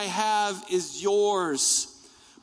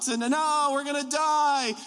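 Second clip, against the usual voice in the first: put-on frightened, babyish, high, panicky crying wail; 5 semitones higher than usual. Retelling a roller coaster ride where they screamed the whole time: retelling screaming like a baby. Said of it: "And just screaming".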